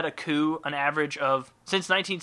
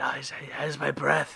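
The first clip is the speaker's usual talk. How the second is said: imitated whisper. Acting out a stock-photo couple under the sheets: imitating a whisper. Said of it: "whispering closely, going".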